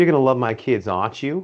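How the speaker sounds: put-on Boston accent. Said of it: "in her Boston accent".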